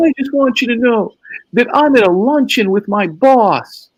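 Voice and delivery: mock upset, high, teary sobbing voice. Retelling the same call as Kim breaks down: imitating Kim screaming and crying. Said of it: "she starts screaming and crying".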